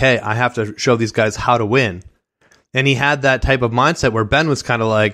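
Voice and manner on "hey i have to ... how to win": ordinary delivery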